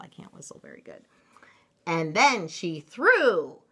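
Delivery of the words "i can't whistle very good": soft, fast whispered aside. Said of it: "That's all I can do to whistle".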